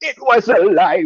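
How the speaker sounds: high, slow, taunting, mocking voice. Retelling a villain mocking a grieving character: imitating Komodo mocking. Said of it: "Komodo even mocks her for it later".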